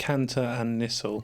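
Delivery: slow, clear, careful spelling out. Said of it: "say that name again more clearly and slowly".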